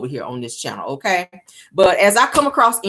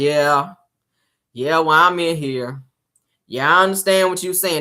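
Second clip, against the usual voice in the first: mock uninterested, flat, bored, going through the motions; 3 semitones lower than usual. Retelling how he talked to Shirley on the phone: imitating someone bored. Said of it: "That's how he's talking to Shirley. Like he did not want to be on the phone with her".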